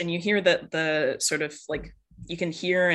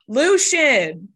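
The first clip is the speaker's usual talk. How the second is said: very loud, high-pitched yelling; 8 semitones higher, 10 dB louder than usual. Voicing a mom who turns around and yells into the house: yelling into the house. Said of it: "does it again and goes".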